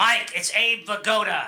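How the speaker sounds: slow, drawn-out put-on New York guy accent. Joking about his father's voicemail, playing a random caller: imitating a new york accent. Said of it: "some random guy with a New York accent".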